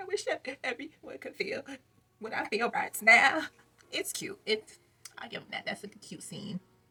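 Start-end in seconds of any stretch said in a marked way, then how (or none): 0.0-3.4 put-on high, loud, breaking-down sobbing. Retelling a reality show scene where she breaks down: imitating someone crying. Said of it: "breaking down crying".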